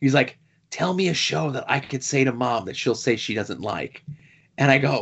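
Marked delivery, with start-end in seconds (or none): 0.7-4.0 mock whisper, quieter. Retelling the son whispering a request: imitating a whisper. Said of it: "he comes in and he's whispering to me".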